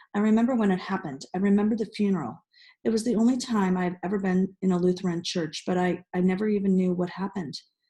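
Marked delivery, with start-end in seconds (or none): none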